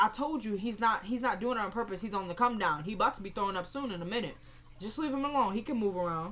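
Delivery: ordinary talk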